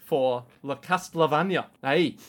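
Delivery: sudden slip into slow, put-on Scottish accent. Podcast host mentioning a castlevania episode, scottish accent. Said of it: "don't know why I just went Scottish".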